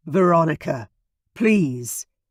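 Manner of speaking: imploring, pleading voice. Reading a story aloud, Ian begging Veronica as she leaves: imploring voice. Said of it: "his voice imploring".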